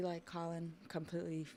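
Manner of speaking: ordinary talk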